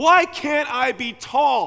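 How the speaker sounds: slow, high, loud shout.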